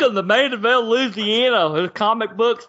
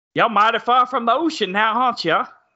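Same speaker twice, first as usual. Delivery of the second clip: clumsy, bad put-on Louisiana accent. During a movie commentary with friends, a line in a bad louisiana accent. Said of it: "That's a bad Louisiana accent".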